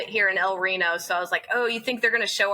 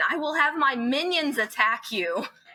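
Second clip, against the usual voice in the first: put-on angry, pitched-up mock-mad scream; 6 semitones higher than usual. A parent retells her youngest son screaming at another child mid-fight: imitating an angry scream. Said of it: "got real mad and screamed at Aiden".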